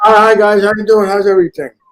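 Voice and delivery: very loud. A newcomer greeting the group as he arrives, loud. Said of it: "Whoa, so loud".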